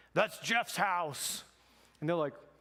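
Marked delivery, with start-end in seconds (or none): 0.1-1.4 put-on imposing, booming voice. Speaker retells a voice suddenly heard behind a couple at the door, booming voice. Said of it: "this like booming voice behind them".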